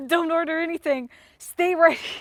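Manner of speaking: play-acted pressing, urgent commanding tone. Retelling stopping someone from ordering in a queue: retelling an urgent command. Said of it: "I scared the shit out of her".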